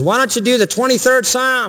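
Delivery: yelled out, pitched high. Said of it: "so he yelled out to the actor".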